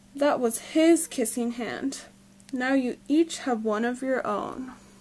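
ordinary delivery, nothing marked

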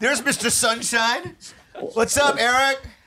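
talking very loud. Greeting another speaker who just joined the video call: yelling. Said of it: "stop yelling".

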